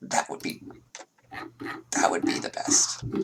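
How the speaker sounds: rasping voice. Playing a character speaking to the other players, raspy voice. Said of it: "trying to get that raspy sort of voice".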